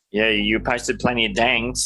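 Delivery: ordinary delivery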